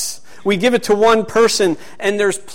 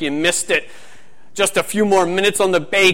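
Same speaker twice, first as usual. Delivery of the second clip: put-on tough, demanding, pushing Scottish accent; 3 dB quieter than usual. Speaker quoting Paul, who always pushes people to the next level: Paul impression, Scottish accent. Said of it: "that's like a Scottish accent".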